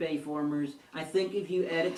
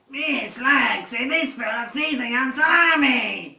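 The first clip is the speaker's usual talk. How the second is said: put-on robot dinosaur voice, higher and louder; 8 semitones higher, 11 dB louder than usual. Quoting a line from the eighties Transformers movie: Slag impression. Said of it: "I was impersonating Slag".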